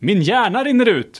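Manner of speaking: shrill, very high screeching scream. Reading a listener's story of a grandmother who fell on the ice, retelling a scream. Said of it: "Då skrek hon".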